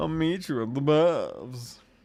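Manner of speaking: put-on camp posh British accent. Retelling a character's line, in a posh camp british voice. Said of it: "I sound like some sort of posh camp guy".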